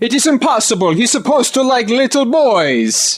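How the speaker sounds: very high, fake put-on Italian accent. Talking about an Argentinian man, the speaker does a put-on Italian accent. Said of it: "why you would do an Italian voice".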